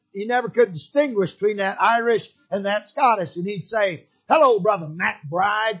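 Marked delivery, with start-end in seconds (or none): 4.3-5.8 low, rumbling, gravelly preacher voice. Retelling how a preacher friend greeted the speaker, imitating Brother Wright's low, gravelly voice. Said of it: "He had this real low".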